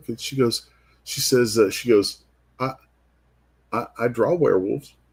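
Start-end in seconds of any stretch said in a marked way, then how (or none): 2.6-4.9 put-on small, quiet little voice. Retelling what a girl said to the speaker, quiet little voice. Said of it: "just this quiet little voice goes".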